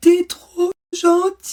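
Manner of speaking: very high, very loud, suffocating gasping sob. Retelling what a crying partner said back to the speaker, imitating gasping speech. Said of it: "il me dit en suffoquant".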